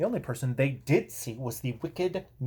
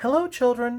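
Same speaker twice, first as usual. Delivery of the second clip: sugary, sweet, very high voice; 10 semitones higher than usual. Narrating a story, someone greets the children in a sweet voice. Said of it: "said someone in a sweet voice".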